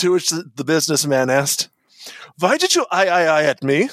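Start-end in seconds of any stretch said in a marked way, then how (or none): 2.4-3.9 clumsy put-on German accent, slow and swooping. Telling a golf joke, voicing the businessman's question, bad german accent. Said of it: "In a pointless bad German accent".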